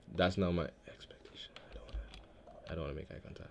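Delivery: unvoiced, very soft, frightened whisper.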